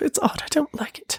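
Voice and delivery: bad sad British accent, soft, hushed, half-whispered. Repeating a woman's running-joke saying, in a bad British accent. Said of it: "my sad excuse of a, of a British accent".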